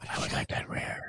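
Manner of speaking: put-on commentator whisper. Joking about how whispering commentators would order dinner: imitating a whispering commentator. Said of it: "And they always have to whisper".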